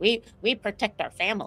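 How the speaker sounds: put-on little robot voice. Showing how Clippy says the family line: imitating Clippy. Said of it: "how does Clippy say it?".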